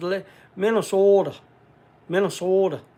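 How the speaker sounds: put-on Minnesota accent. Imitating a buddy from Minnesota saying the state's name: imitating a Minnesota accent. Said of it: "that's the way he says it when he talks".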